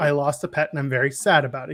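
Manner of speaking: plain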